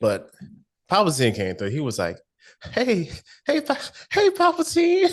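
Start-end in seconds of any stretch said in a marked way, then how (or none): 2.7-5.1 mock little-punk voice, much higher, slower. Speaker retells someone greeting Palpatine, mock little-punk greeting. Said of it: "act like a little punk".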